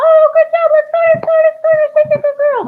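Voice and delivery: put-on very high, loud, excited teenage-girl voice. Showing people how to praise a dog in practice, in your inner teenage girl voice. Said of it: "get their inner teenage girl voice".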